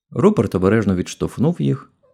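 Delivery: ordinary delivery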